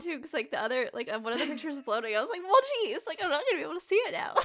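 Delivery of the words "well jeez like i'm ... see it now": put-on very high, fed-up, exasperated tone. Retelling own reaction when a call interrupted a loading picture: imitating own annoyed self. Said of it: "I was so annoyed when you called".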